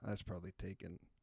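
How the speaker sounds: whispering. Brainstorming a podcast name with a co-host, whispering. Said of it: "I don't know why I'm whispering that".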